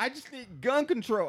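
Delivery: very high, loud, derisive parody voice. In a conversation about gun control, a mocking imitation of her. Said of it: "I'm sorry I'm mimicking her".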